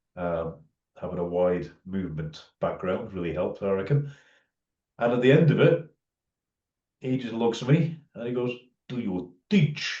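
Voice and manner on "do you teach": put-on Russian accent, Latvian flavor. Retelling a kettlebell coach's question after a workshop: imitating Vasily's Latvian Russian accent. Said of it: "in his Latvian Russian accent".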